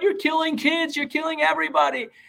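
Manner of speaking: high, loud mock scream. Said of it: "they start screaming".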